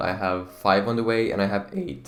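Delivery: voice cracking. Talking through a collection of Briars, voice cracking. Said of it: "that was a huge voice crack".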